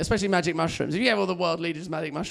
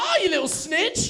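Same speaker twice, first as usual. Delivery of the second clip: very high, slow, special dog voice. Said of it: "still in the voice".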